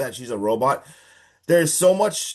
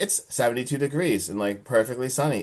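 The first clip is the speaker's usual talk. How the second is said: mock robotic voice, flat and quieter; 4 dB quieter than usual. Retelling how a character answered a question about the weather: imitating robotic delivery. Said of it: "says it so robotically".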